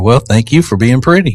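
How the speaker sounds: normal talking voice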